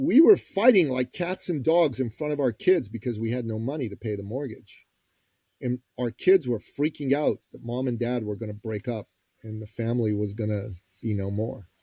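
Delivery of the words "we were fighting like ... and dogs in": plain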